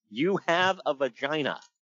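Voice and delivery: ordinary delivery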